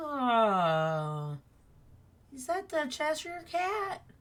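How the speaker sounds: little tiny voice, high and soft, drawn-out oh. Game master voicing an unseen speaker in the scene, in a little tiny voice. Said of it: "you hear a little tiny voice go".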